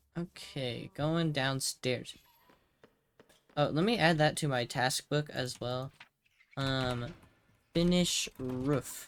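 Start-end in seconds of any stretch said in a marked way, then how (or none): 7.8-9.1 a touch of British accent. Adding a task to a task book: British-sounding accent. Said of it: "That was kinda British of me".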